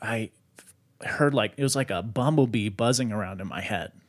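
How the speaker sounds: plain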